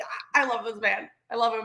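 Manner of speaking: plain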